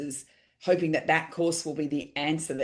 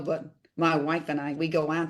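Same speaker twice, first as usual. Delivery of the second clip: put-on New York accent, slower. Speaker retelling what Ron Tacky used to say to him, imitating Ron Tacky's New York accent. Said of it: "he was a New Yorker".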